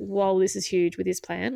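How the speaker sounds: usual speaking voice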